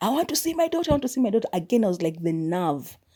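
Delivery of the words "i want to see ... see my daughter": very high, shrill, angry, rapid, repeated yelling. Retelling how a father yelled outside the gate while the guard told him to leave; retelling a yell. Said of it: "and he's yelling".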